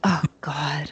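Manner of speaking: imitated irritated mutter. Retelling how Joy, irritated by the interruptions, reacted: retelling a mutter under her breath. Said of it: "started muttering under her breath".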